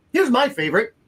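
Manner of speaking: sarcastic "favorite". Introducing the next example of a tool: sarcastic on "favorite". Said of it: "I say that in a very sarcastic way".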